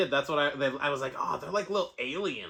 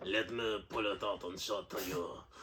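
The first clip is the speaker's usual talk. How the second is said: low, soft, put-on French accent; 6 semitones lower, 7 dB quieter than usual. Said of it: "I can do French all right".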